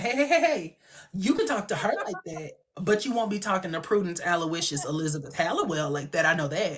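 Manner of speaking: put-on scolding, stern, laying-down-the-law tone. Retelling a scene from a show, imitating Prue scolding. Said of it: "Prue was looking like".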